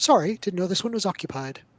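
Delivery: warm, charming, friendly delivery. Voicing a halfling apologizing to goblins for intruding: charming. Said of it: "he puts on some charm".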